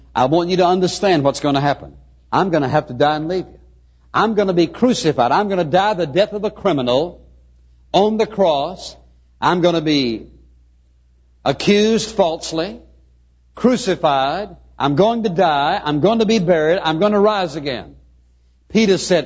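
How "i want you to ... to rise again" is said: ordinary talk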